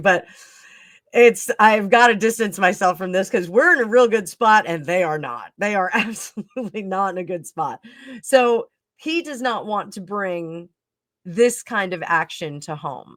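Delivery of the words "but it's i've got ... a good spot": fast speech breaking up with giggles and laughter. Reader goes over King Charles's tarot reading, laughing while talking. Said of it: "I'm sorry I'm laughing".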